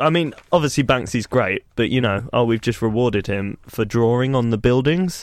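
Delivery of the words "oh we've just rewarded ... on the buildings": ordinary talk, nothing marked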